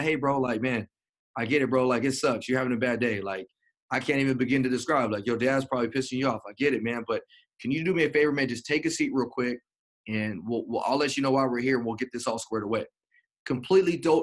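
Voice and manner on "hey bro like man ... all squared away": ordinary delivery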